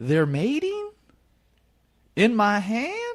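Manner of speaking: very high, swooping, drawn-out delivery. Repeating a quote from Huel about shrimp in his hand: imitating Huell Howser. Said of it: "I'll repeat the quote from Huel".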